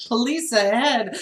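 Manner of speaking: ordinary delivery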